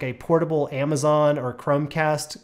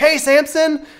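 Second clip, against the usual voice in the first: very high, thrilled, acted-out excited voice; 12 semitones higher, 8 dB louder than usual. Retelling greeting the bus driver each morning: imitating an excited greeting. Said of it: "be really excited when I did it".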